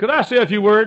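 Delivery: very high-pitched, bad, poor put-on English accent. Retelling a church lady from england asking during the service to speak, poor english accent. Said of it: "In her poor English accent".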